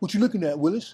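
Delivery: mock defiant, tough child voice. Imitating a kid who answers back to intimidation: a defiant kid. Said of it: "he'll give it right back to you".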